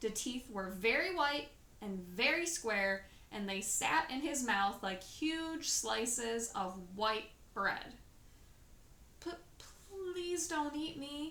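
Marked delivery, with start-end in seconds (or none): 9.2-11.3 soft, high, slow, halting, frightened stammer. Sophie pleads with a grinning giant not to eat her; stammering. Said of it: "Sophie stammered".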